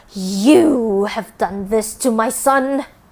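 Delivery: loud, furious, snarling voice. Narrator voicing a woman confronting her daughter-in-law about her son, snarling. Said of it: "she snarled".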